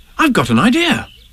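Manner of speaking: sudden, high cry bursting out. While everyone is thinking, one of the friends suddenly cries out: crying out suddenly. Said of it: "cried Christopher Robin suddenly".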